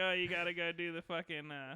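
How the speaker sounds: usual speaking voice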